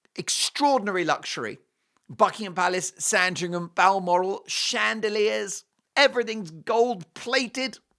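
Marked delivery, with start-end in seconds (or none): none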